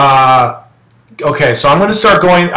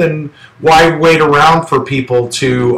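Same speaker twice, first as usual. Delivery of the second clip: normal talking voice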